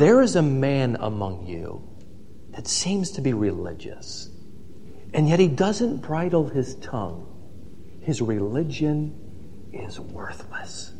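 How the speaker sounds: very quiet, low, hushed, confiding close-mic delivery. Quoting the Book of James as if James leaned in, in a lowered voice. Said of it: "he leans in and he lowers his voice".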